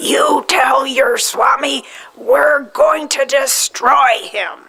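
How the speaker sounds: play-acted high, slow, drawn-out, deliberate scream. Retelling what he screamed at the speaker who was leaving: imitating someone screaming. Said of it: "he screamed".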